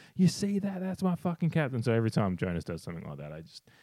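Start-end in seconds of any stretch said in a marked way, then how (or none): 0.2-1.8 put-on very high, loud drunken hollering yell. Retelling cheering at a game while drunk: retelling a drunken yell. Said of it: "I'd look at them and go".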